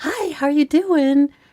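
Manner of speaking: put-on sweet, fake-nice phone voice, high. Retelling how mom stopped yelling to answer a phone call, mimicking mom's fake-nice phone voice. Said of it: "how did that voice come out".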